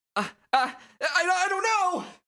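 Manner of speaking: intimidated character voice. Voicing a game character cornered by a pushy kid: intimidated character voice. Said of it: "this man is so intimidated by a fucking gamer child".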